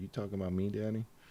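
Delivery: put-on babyish, cutesy little kid voice, baby talk. Voicing the dog asking if it is being talked about: baby voice. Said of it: "Get the baby kind of voice".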